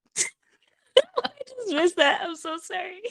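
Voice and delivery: very high, with giggles breaking through. Apologizing to the co-host after missing a joke, laughing while talking. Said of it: "I can't stop laughing this episode".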